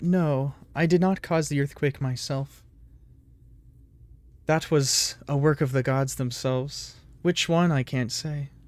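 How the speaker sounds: hushed stage whisper. Game master voices Antiophs, a servant of the underworld, answering a player, half-whispered. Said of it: "and it speaks in a whispered voice. / you see an interesting sort of humanoid creature in there. It is currently glowing as if it is the night sky itself. As you all walk in, standing in front of the".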